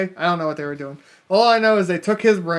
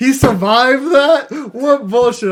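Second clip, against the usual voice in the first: pissed-off, disbelieving rant, loud and high-pitched; 7 semitones higher, 7 dB louder than usual. Retelling own reaction to a movie scene: retelling own pissed-off reaction. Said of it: "I'm all pissed off".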